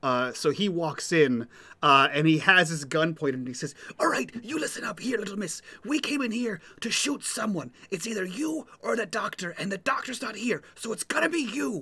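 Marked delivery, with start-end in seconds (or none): 4.0-11.8 intimidating, menacing, hushed stage whisper. Voicing a gunman threatening a girl: intimidating stage whisper. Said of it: "stage whisper".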